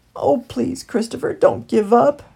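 begging, pleading, imploring tone. Trapped in a dark burrow, Heathley speaks to his friend Christopher, begging. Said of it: "begged Heathley".

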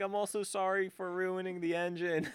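high, tearful crying voice. Retelling how she came back from the beach: imitating someone crying. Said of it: "she comes back crying".

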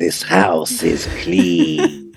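put-on very slow little old lady voice. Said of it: "images of a little lady going".

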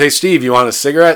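put-on Irish accent. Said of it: "he's gonna be having an Irish accent".

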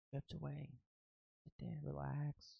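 inspiring whisper. Speaker giving relationship advice, saying it the inspiring way, in an inspirational whisper. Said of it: "say this like in a whisper".

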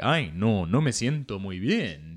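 put-on macho superhero voice. Showing the spanish superhero voice they had, macho spanish superhero voice. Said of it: "my Spanish superhero voice was like a very like machismo dude".

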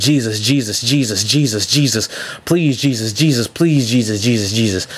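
put-on strained, desperate pleading tone. Retelling praying while physically strained, grabbing the head: retelling a strained desperate plea. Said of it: "physically strained".

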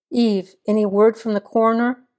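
ordinary delivery, nothing marked

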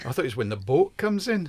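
failed, botched Geordie accent. Discussing what people say when they imitate Geordies, attempting a bad Geordie accent. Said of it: "That sounded like Indian".

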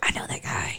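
whispered, stunned aside. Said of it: "I was like".

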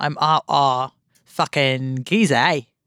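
poor, bad put-on Australian accent. Mocking an actor's attempt at a role, in a bad Australian accent. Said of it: "doing not a good Australian accent".

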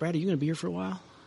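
put-on whisper. Retelling how a wine store owner whispered a question: imitating someone whispering. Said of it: "he whispers in my ear. He goes".

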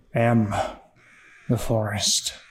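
slow, drawn-out, strained labored voice. The forest speaking, in a slow, labored voice. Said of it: "because the forest talks real slow".

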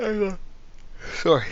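very high squeaky voice spoken through a yawn. Breaking off during a chat about a game, the speaker talks mid-yawn. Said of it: "you can't talk to me while I'm mid-yawn".

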